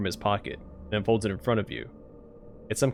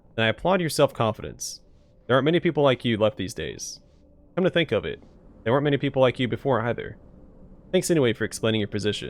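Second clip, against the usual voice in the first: usual speaking voice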